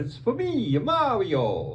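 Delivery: cartoonish video game hero voice, high, swooping wide. Narrating a muted game clip and showing off an impression; Mario impression. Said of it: "That's my Mario impression".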